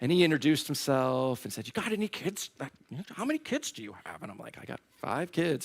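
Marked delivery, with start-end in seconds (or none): 1.7-4.2 put-on voice of an annoying, irritating little child. Retelling what the kid sitting next to them asked, in The Polar Express kid voice. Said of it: "had the voice from that annoying kid".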